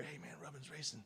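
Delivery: very quiet, close ear whisper. Retelling a drunken prank of waking sleepers: imitating a whisper in the ear. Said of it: "whisper in your ear".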